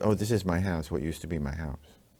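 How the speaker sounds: put-on offhand, nonchalant tone. Retelling how she showed the photo of her ruined house: imitating an offhand remark. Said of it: "It was just offhandish".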